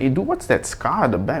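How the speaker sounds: ordinary talk, nothing marked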